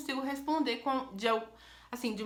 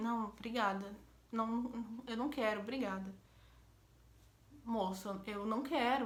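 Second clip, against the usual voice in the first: timid, meek voice, much quieter; 7 dB quieter than usual. Retelling refusing a man who kept insisting she get in, retelling a timid refusal. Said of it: "a cabeça baixa".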